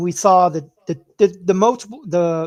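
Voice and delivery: stuttering, tripping repeatedly over one word. Discussing quarterback play, apologizing for stumbling on words; stuttering. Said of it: "I'm stuttering on my words right now".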